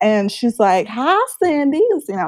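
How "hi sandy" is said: put-on Texas accent, pitched up. Retelling how the counselor greeted her, in a put-on Texas accent. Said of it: "it's Texas".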